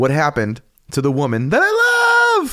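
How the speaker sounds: high yell shooting sharply up at the end. Speaker reenacts a man yelling heard through the wall, imitating a yell going high. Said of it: "It got super high in the second part".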